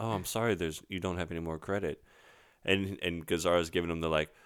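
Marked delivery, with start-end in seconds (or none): 0.0-2.0 mock very polite gentleman voice, quieter. Retelling a film scene, voicing the attendant: imitating a very polite gentleman. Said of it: "the very polite gentleman comes over and says".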